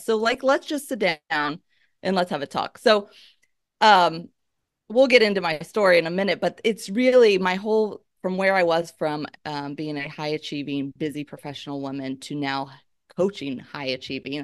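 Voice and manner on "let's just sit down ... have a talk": normal talking voice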